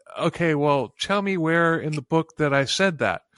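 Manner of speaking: ordinary talk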